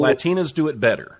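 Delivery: ordinary delivery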